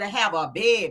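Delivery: put-on Louisiana accent. Retelling gossip to a listener, saying it in your Louisiana accent. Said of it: "in my Louisiana accent".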